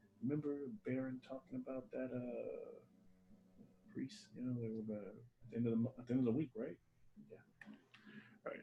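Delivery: half-whispered, very quiet, barely audible. Narrating a guard who steps away to speak to another guard, half-whispering. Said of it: "he kind of whispers".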